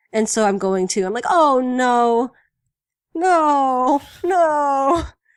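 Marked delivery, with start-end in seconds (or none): 1.2-5.0 sad, high, loud crying, sobbing. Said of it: "So that made me sad".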